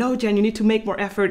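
normal talking voice

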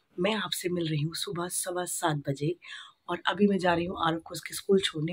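soft, hushed half-whisper.

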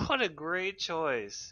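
slow, high, sarcastic fake praise. Reacting to another player's weapon choice: sarcastic. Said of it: "Are you being sarcastic?".

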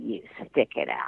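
whispered, hushed, whispery witchy voice. Quoting Mom's reply to a tearful plea to come home, in a put-on witch voice. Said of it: "she said to me in her best witch voice".

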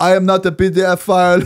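put-on dad-like voice with Arabic accent.

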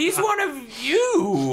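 mock exasperated, high, slow and loud.

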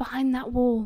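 ordinary delivery

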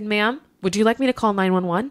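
mock dead-serious tone. Retelling how the speaker responded to an upset stranger, putting on an exaggerated show of earnest concern, imitating own serious tone. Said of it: "if you continue to yell".

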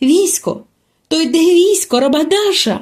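high, exclaiming cry. Spotting helmets and armour approaching, she exclaims. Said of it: "вигукнула Аравіс".

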